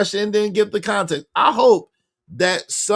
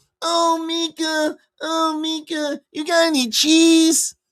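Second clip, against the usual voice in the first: high, pitched-up, mocking put-on voice; 7 semitones higher than usual. Mocking a suggested sweet line by acting it as Urkel: Urkel voice. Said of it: "Anton ain't Urkel".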